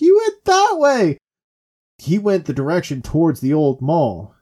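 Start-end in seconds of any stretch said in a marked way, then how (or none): 0.0-1.2 very high, slow, loud mock victim voice. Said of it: "And she's like".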